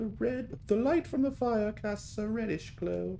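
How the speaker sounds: put-on high, slow British accent. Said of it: "I get to do my British accent whenever I'm reading".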